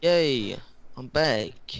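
sarcastic, fake-happy, mock-cheerful tone. Player back in the game right after dying, sarcastic. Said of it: "That is so sarcastic".

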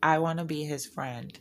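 ordinary talk, nothing marked

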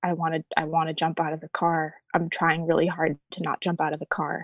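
mock whispering. Retelling what was whispered to Paul in the car: imitating a whisper. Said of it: "I whispered to Paul".

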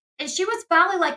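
plain

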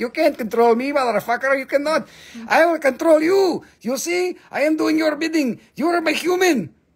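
very high-pitched talking-rock character voice. Speaker acts out a rock answering someone who tries to control it, in a talking rock voice. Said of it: "They talk like that".

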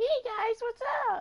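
squeaky voice, pitched way up. Speaker whose voice got deeper redoes his former squeaky voice. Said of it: "Instead of my squeaky voice".

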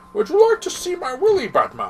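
high villain voice, swooping around. Recalling an online video episode, the speaker repeats a quoted line in Bane voice. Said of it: "they were doing the Bane voice".

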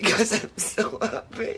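whispered through happy tears, hushed and breathy. In a scene, answering someone who asks why you are crying, crying happy tears. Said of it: "Why are you crying?".

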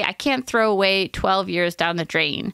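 ordinary talk

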